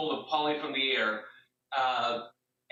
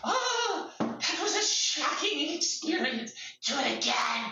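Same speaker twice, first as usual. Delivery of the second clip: very high, very slow, drawn-out monster drawl; 12 semitones higher than usual. Voicing a creature after being hit by lightning: in-character monster voice. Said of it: "He looks over at you and he goes".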